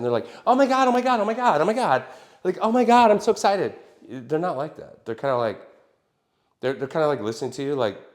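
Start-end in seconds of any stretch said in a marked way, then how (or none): 0.4-3.7 play-acted very high, loud, giddy puppy-dog gushing. Mimicking eager industry newcomers: imitating gushing excited newcomers. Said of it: "brand new puppy dogs".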